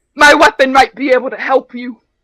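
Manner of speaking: booming, very loud fantasy-hero yelling. Voicing a character who yells at a player: Kevin yelling. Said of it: "you hear Kevin yell at you".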